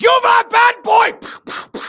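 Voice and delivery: very high, drawn-out, loud monster cry. Acting out Krampus catching a bad child: voicing Krampus. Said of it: "Krampus, like, shows up with the horns".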